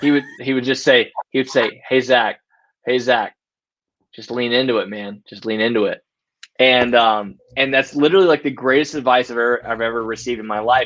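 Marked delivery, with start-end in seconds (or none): 1.9-6.0 whisper, lower-pitched. Retelling a former coworker's advice during a stressful shift: imitating a whisper. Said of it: "lean in and whisper in my ear".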